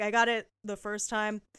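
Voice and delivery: ordinary talk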